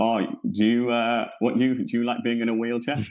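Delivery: flustered, panicked blurt, tripping over words. Retelling a stand-up gig going wrong: imitating panicked speech.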